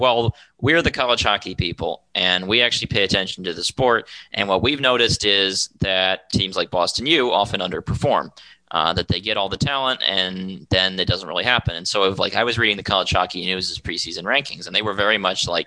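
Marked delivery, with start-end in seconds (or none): none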